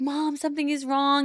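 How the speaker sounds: high, tearful, hysterical sobbing. Retelling calling her mom after seeing blood, acting out hysterical crying. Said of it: "I'm hysterically crying".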